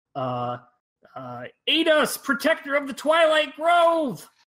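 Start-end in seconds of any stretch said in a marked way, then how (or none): 1.7-4.3 very high, loud, shrieking goblin voice. A goblin speaker drops to his knees and calls for help, shouting out as a goblin. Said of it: "shouts out in Goblin".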